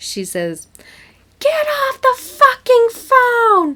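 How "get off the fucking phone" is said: very high, very loud, shrill, drawn-out scolding scream. Retelling how mom came out the front door: imitating mom screaming. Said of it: "my mom came out the front door and screamed at me".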